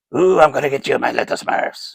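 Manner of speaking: clumsy high cartoon voice. Showing wind-up toys, doing a bad Gargamel impersonation. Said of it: "that's a bad impersonation".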